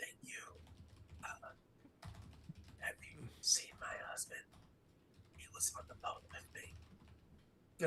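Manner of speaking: hoarse, rusty, raspy, very hushed whisper. Voicing a woman not used to speaking, just handed ointment: raspy, whispered voice. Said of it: "says in a really raspy voice that she's not used to speaking".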